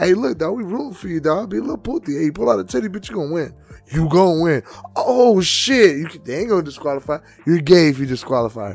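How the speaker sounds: acted, nonchalant, offhand, swooping hype-man voice. Acting out cheering on a contestant: nonchalant pimp coach voice. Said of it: "so nonchalant".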